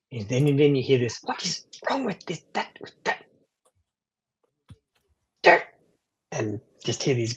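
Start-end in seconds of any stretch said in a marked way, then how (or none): 1.3-5.7 very high-pitched, frustrated grumbling. A game narrator voices an unseen figure the players hear; high-pitched frustrated grumbling. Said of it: "this high-pitched high-pitched voice".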